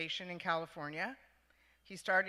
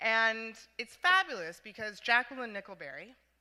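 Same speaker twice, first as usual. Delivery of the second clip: usual speaking voice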